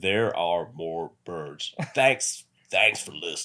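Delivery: put-on American western gunslinger accent. Saying thanks for listening after being asked: Clint Eastwood impression. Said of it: "your best fucking Clint Eastwood".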